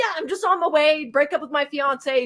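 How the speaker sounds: confident, angry put-on voice. Retelling a caller's words about breaking up: imitating a confident, pissed caller. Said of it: "confident in him saying".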